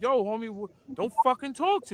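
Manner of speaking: tough, confrontational Brooklyn street swagger. Retelling how Murder got on his Brooklyn bullshit: imitating Murder's tough Brooklyn attitude. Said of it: "Murder got on his Brooklyn bullshit".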